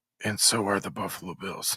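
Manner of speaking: put-on whisper under breath. Retelling the asterisk aside in own snarky post: imitating whispering under breath. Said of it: "whispers under his breath".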